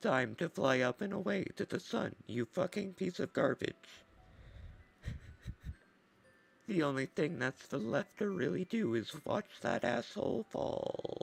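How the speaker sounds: bad, put-on, synthetic, robotic computer machine voice. Trying out a device that prints comics, voicing it in a computer voice. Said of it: "the computer voice that I've done".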